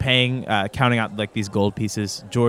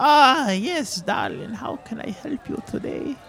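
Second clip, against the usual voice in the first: put-on very high, slow elderly woman's voice; 14 semitones higher than usual. Game master voicing an old merchant woman greeting the players: old woman voice. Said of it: "You walk over to this, like, old-looking woman. She goes".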